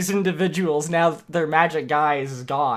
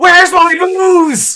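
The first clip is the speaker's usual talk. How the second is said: shrill, booming, all-out, very intense, high yell; 12 semitones higher, 10 dB louder than usual. Voicing a man who is no longer invisible as he yells in a very intense voice. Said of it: "he yells, ... in a very intense voice".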